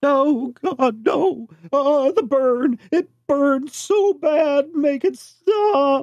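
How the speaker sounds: very high-pitched, distressed, sobbing anguish. A figure cowering in a little ball answers people approaching, crying in distress. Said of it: "it looks like they're crying".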